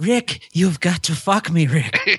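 creepy character voice, high, very slow and drawn out. Twisting a Casablanca line as a joke: Peter Lorre voice. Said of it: "You sound like Peter Lorre".

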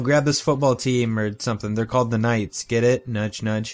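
usual speaking voice

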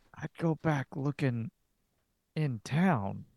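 furtive hushed half-whisper, kept low. A game master voices a man answering the players out of someone's earshot, half-whispering. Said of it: "And he looks at [name] and looks back at you".

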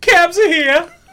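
very high-pitched, loud shouted call. Telling how he copied a friend's habit while leaving his girlfriend: retelling a friend's yell. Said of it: "And I went running out the door".

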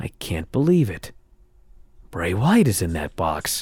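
soft, hushed broadcast announcer tone. Retelling what the announcers said during a match: imitating a hushed tone. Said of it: "saying in a hushed tone".

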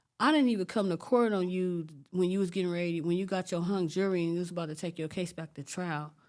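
plain

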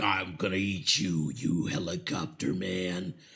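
deep, very slow shark voice, every word dragged. Joining a retold movie scene where the shark attacks: voicing Jaws the shark. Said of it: "and then he's all like".

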